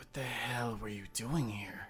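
muttered under breath. Sitting down next to a sleeping man, muttering under one's breath. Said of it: "mutter under my breath".

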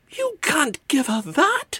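shrill, shrieked, very high-pitched scream. Narrator reads the mother's line to the Hogfather; screaming. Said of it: "she screamed".

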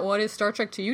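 plain

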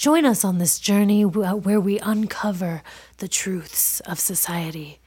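public-radio style voice. Co-host opening the podcast intro for listeners, NPR radio voice. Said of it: "You sound like you're on NPR".

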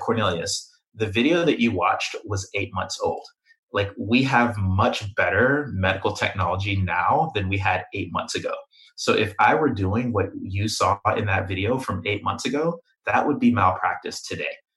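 ordinary delivery

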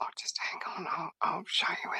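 soft, hushed whisper, very quiet. Retelling what a shop assistant said after a double take, imitating someone whispering. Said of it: "she sort of whispers".

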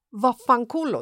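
ordinary delivery

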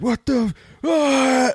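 very high, furious, enraged yelling shriek. Kneeling behind a car, recalling a grown man screaming from the house, imitating a furious man's scream. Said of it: "just furious".

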